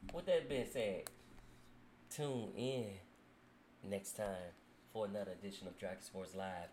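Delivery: silky, smooth, low announcer voice. Signing off an edition of dragon sports live, in a smooth voice. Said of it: "I just go in that smooth voice".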